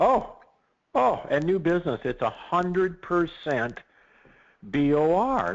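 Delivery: high, loud, excited burst. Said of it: "I know I'm sounding very excited".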